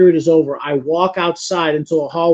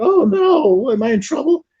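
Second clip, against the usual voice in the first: very high, broken, cracking schoolkid voice; 9 semitones higher than usual. Speaker retelling their surprised reaction as a teenager, broken high school kid voice. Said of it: "with that broken uh, high school kid voice".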